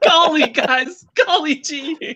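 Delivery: acted dumbfounded exclamation, very high and drawn out. Recalling being too shocked to swear, acting out own shocked reaction. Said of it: "I was so shocked at that I couldn't even swear".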